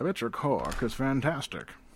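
Scottish movie-star voice. Trying out voices before greeting Andrew on a recording, in a Sean Connery voice. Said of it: "That's my Sean Connery voice now".

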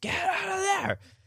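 all-out screaming yell at very high pitch. Retelling a movie scene where a father screams at his son: imitating Brody screaming. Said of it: "he starts fucking screaming at him".

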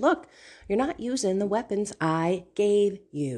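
ordinary talk

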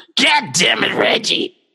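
mock belching rough voice. Redoing the Nick Nolte line as if always burping: burping Nick Nolte impression. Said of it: "it's like he's always burping".

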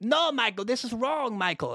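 attempted German accent. Quoting an angry team boss on the radio: attempted German accent. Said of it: "I can't do a German accent".

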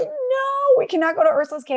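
very high, panicked, terrified shrieking scream. Retelling how the kids reacted near the cave: imitating kids screaming in fear. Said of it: "we would be screaming at the top of our lungs".

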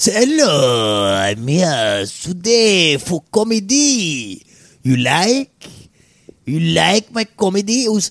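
deliberately terrible, horrible fake French accent. Speaker acts out a comedy stage introduction, in a horrible French accent. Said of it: "Do a horrible French accent".

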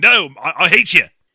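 very loud, slow, weak bad Australian accent. Imitating an angry movie cop someone waved to: bad Australian accent. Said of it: "my Australian accent's not great".

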